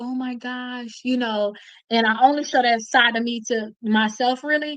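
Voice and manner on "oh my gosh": put-on soft, scared little-girl voice. Describing the scared side of herself: imitating a scared little girl. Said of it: "it's a little girl that's like".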